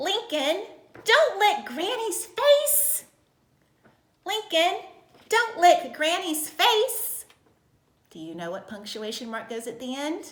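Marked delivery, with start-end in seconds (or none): 0.0-7.3 all-out loud, high-pitched yell. Reading an example sentence aloud in a punctuation lesson, yelling. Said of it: "it's a yelling sentence".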